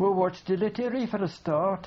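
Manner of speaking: put-on Brummie accent. Retelling a seated man's reply to a driver, in a Birmingham accent. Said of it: "in this sort of accent that they have there".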